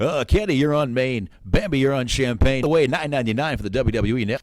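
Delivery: loud strip club DJ voice. Joking about strip bars, the speaker slips into a stripper DJ voice. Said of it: "my stripper D J voice".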